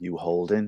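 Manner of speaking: put-on whisper. Retelling leaning in at a wedding table: imitating own past whisper. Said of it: "I whispered my two favorite words".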